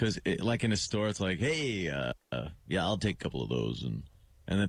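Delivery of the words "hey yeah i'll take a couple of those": phony radio voice, deep and swooping. Imagining him using his on-air voice in a store, phony Jack Diamond radio voice. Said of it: "using that voice all the time".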